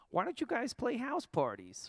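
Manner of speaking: high, lilting, swooping, animated sing-song voice. Retelling a friend's suggestion to play house parties: Megan voice. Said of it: "That's my Megan voice".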